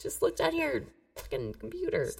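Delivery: petulant, whiny, complaining tone. Complaining that the other player cheated by looking it up: whining. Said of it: "Stop whining".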